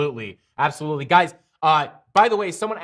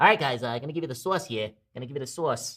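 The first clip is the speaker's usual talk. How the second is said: much quieter cartoon-like voice; 3 semitones lower, 5 dB quieter than usual. Addressing the group, in a Looney Tunes cartoon voice. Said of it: "I sound like a Looney Tunes character".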